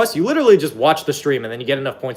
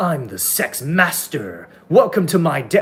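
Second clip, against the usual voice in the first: put-on, slow anime character voice. Imitating men who boast about themselves: anime character voice. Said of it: "I don't know why they're an anime character".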